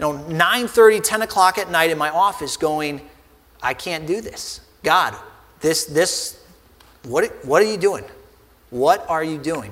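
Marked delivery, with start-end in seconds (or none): 3.6-9.7 play-acted crying out between sobs. Retelling sitting alone in the office late at night: retelling own sobbing.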